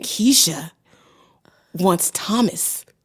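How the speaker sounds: big, over-the-top, dramatic daytime talk-show delivery. Planning to read stories with fake names, a podcaster demos a Maury-style dramatic voice. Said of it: "in the most dramatic voice I can".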